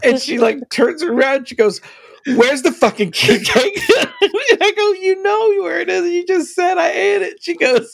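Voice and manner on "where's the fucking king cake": put-on enraged, swearing, full-on rage. Retelling a woman discovering the king cake was eaten, imitating her rage. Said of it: "I can hear like the rage".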